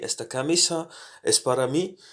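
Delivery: rising pitch on the final word mí. Spanish lesson, turning the line into a question: pitch rising at end on mí. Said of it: "We have to uh, raise our intonation at the end since it's a question".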